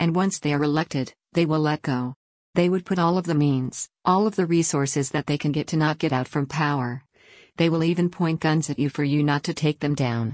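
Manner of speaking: usual speaking voice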